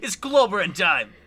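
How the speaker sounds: put-on Cockney accent. Trying the accent a second time, speaker does a Cockney accent. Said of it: "That was better".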